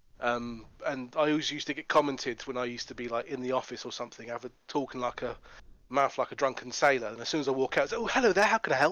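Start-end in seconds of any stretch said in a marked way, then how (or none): 8.0-8.9 sultry customer service phone voice, pitched up. Recalling switching voices on walking out of the office, sexy customer service phone voice. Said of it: "my sexy customer service phone voice".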